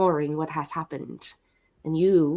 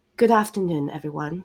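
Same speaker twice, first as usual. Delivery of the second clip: on-air radio announcer delivery, usual accent dropped. A character opens a speech to the student body: radio host voice. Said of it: "in her like radio host voice".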